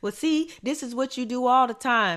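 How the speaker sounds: defensive snap.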